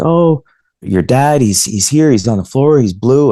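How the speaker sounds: acted, high, panicked sobbing and screaming. Retelling a phone call from the mother: imitating someone crying and screaming. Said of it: "she was crying and screaming".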